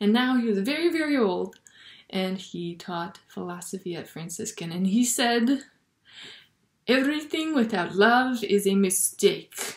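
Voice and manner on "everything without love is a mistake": terrible, bad fake French accent. Quoting a very old philosophy teacher in a terrible French accent. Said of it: "That's my terrible French accent".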